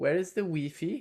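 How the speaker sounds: put-on German accent. Speaker pictures how a question would sound in a German accent. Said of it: "I could picture that in a German accent".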